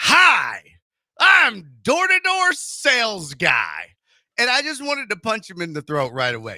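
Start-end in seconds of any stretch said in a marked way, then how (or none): 0.0-3.9 mock pushy salesman voice, loud, swooping, very slow, drawn out. Retelling a salesman's greeting at the door: imitating an overly aggressive greeting. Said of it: "he sticks his hand out overly aggressively".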